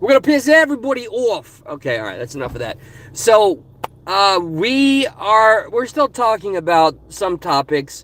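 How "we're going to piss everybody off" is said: put-on New York accent, pitched up. Announcing a show's return, repeating the line in a New York accent. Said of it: "where'd that New York accent?".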